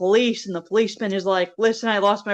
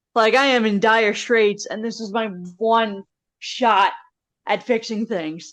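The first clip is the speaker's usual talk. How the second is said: ordinary delivery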